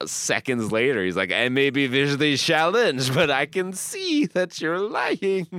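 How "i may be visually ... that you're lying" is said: put-on over-the-top French accent, higher pitch. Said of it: "this over-the-top French accent".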